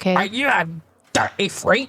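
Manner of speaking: accusatory, accusing tone. Asking another speaker a pointed question: accusatory tone. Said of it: "it sounded very accusatory".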